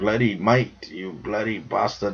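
put-on British accent. Joking about accents with another speaker, in a mock British accent. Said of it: "I know you're talking British or something".

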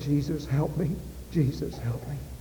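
spoken softly. Retelling what a woman said as memories of her sister's death returned, said quietly. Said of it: "I quietly said".

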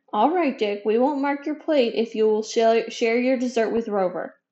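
ordinary delivery

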